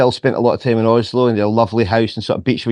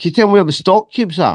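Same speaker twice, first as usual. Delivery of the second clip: put-on pure, thick, broad Scottish accent, pitched up; 8 semitones higher than usual. Retelling what they said to a girl while looking for an item, pure Scottish accent. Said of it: "in pure Scottish".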